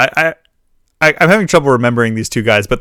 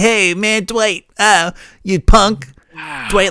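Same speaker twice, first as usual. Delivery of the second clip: put-on high, slow, nasal character voice; 7 semitones higher than usual. Recalling a scene with dwight, quoting a man in high-pitched nasal voice. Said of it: "he's got that high pitched kind of nasally, like".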